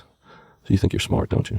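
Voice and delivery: very quiet, hushed, soft-spoken, understated jab. Retelling how the silent board chairman finally spoke, imitating his very quiet delivery. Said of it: "just very quietly says".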